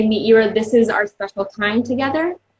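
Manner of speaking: ordinary talk, nothing marked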